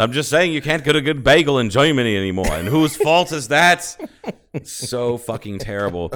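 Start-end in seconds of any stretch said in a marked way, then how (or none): 0.0-4.0 put-on clear, loud Brooklyn accent.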